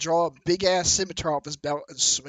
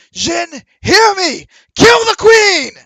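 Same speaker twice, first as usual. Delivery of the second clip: all-out, very loud, very high, drawn-out yell; 17 dB louder than usual. Voicing a man who blows a horn and calls the Jin: yelling as loud as possible. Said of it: "yells out as loud as he can".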